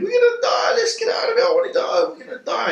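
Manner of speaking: very high, swooping, panicked sobbing screams. Retelling what a man on the boat screamed, imitating someone screaming and crying. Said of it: "he's crying. And he's and he's screaming".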